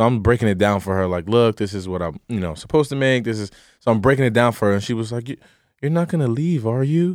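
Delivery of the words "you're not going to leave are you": put-on soft Puerto Rican accent, high pitch. Quoting her mom's question, the speaker uses a soft Puerto Rican mom voice. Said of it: "with the soft Puerto Rican mom voice".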